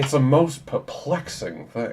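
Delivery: loud, high-pitched, laid-on southern drawl. Improvising a puzzling medical case for Doctor Mudd in a Benoit Blanc accent. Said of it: "slide all the way to Benoit Blanc with this accent".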